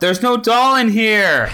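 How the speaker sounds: high-pitched call. A character who came in for a doll finds none, yelling. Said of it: "I'm gonna yell".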